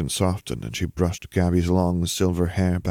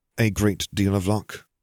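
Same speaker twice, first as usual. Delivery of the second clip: ordinary delivery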